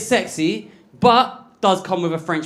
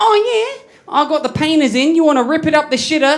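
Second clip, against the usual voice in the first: put-on high-pitched Australian accent, young girl's voice; 8 semitones higher than usual. Retelling what an Australian girl once said to the speaker, imitating an Australian girl. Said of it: "An Australian girl once said to me".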